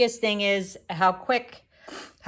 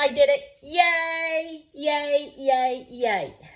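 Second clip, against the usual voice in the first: high, thrilled little excited victory cheer; 6 semitones higher than usual. Finally succeeding after struggling to make progress; excited cheering. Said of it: "I am so excited".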